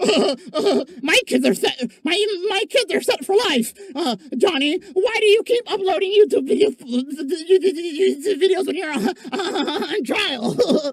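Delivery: stammering, tripping over repeated words. Retelling how another person answered on camera: imitating someone stuttering.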